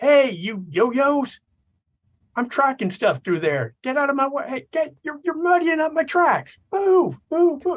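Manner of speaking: very high, loud, shrill taunting holler. In a tabletop game, the player's character shouts at the lizard people, The Max yelling. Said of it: "The Max will yell out".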